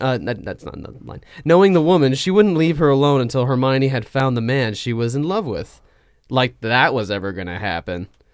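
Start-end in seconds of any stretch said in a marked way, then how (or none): 6.3-8.1 openly sarcastic, sardonic tone. An aside added while reading a text aloud, sarcastic. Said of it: "I just said it sarcastically".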